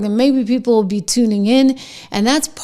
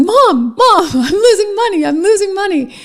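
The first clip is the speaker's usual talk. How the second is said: put-on high, freaked-out, panicking child's voice; 9 semitones higher than usual. A mother retells her son watching his trading account; imitating a panicking child. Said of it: "he's like freaking out".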